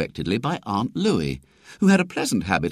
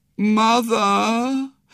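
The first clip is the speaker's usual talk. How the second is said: thin, quavering, drawn-out pleading call; 9 semitones higher than usual. At the top of the stairs, he calls to his mother in a thin, quavering voice. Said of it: "he called in a thin, quavering voice".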